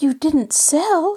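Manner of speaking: worried, anxious voice. Narrator reading a character's question about the house sale, anxious. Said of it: "Nancy questioned anxiously".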